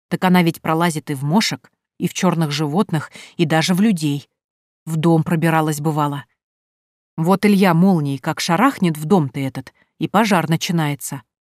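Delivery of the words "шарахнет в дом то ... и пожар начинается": ordinary delivery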